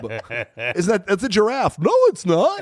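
high pitch swooping around. In a joking conversation, talking in a Bozo the Clown voice. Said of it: "Why do you sound like Bozo the Clown?".

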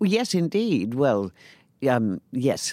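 very slow, wavering, reluctant, hesitant agreement. Asked whether a director once directed them, the interviewee answers hesitant. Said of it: "I say that with slight hesitation in my response and my voice".

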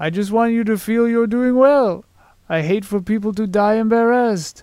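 put-on voice drifting into a French accent. Repeating a man's words while trying to do his voice, attempting his voice, too French. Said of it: "I'll try to do his voice".

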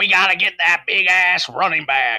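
put-on Southern accent, laid on. Discussing running-back draft picks, imitating Ralph Wilson in a Southern accent. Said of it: "That's a Southern accent".

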